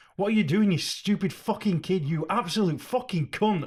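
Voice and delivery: enraged, furious, high-pitched shout. Retelling shouting at Wanda while a neighbor overheard, re-enacting angry shouting. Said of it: "as I was shouting".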